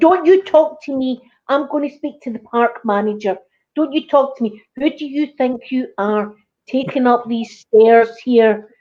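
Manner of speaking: ranting, indignant, entitled telling-off tone. Retelling how a lady yelled at a girl on park stairs: imitating an angry Karen. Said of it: "that was a full-blown Karen right there".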